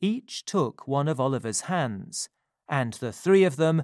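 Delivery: ordinary delivery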